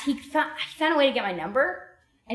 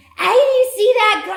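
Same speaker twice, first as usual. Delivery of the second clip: terrible put-on British accent, screamed loud and high; 11 semitones higher, 7 dB louder than usual. Retelling how a man screamed after she pointed, retelling a scream in bad british accent. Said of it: "I don't have a good British accent".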